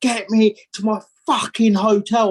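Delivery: play-acted angry scream, high and drawn-out. Speaker retelling being dumped in the middle of nowhere, retelling his own scream. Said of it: "I'm going".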